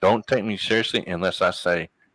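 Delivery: ordinary delivery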